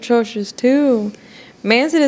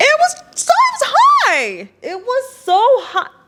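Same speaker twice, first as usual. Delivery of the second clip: very high, swooping, drawn out, climbing pitch; 13 semitones higher than usual. Answering whether the number was too low or too high: voice getting higher. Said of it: "you see how the voice got higher?".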